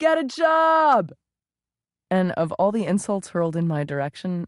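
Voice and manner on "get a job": very high mocking shout. Retelling an insult from a passing car: imitating a shouted insult. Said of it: "shouted from a passing car".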